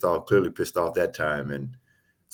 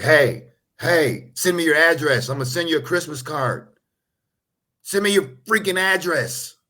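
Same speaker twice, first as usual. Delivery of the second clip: furious, very high-pitched, angry shouting; 11 semitones higher, 5 dB louder than usual. Joking about what he said on the sideline video, do a pissed-off Tom Brady impression. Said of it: "He's like".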